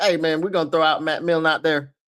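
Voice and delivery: breezy, careless, offhand tone, tossed off without a care. Imagining the owner casually sending out Matt Millen: imitating William Clay Ford, cavalier. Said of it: "William Clay Ford".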